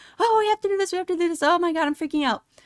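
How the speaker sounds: high, panicky, freaked-out squealing.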